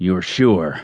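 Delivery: deep, dark voice. Narrator reading a man pressing a weakly pleading woman again: deep, dark voice. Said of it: "the deep voice added darkly".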